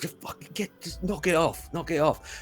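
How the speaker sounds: very high, irritable, fussy fretting. Voicing the scarred tortoise head while it is wrapped up: fussing. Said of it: "is kind of fussing, going".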